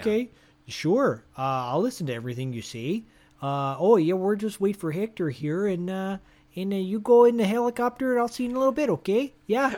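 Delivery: put-on Canadian accent. Acting out what a sister would sarcastically say: put-on Canadian accent. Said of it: "you just devolved into Canadian".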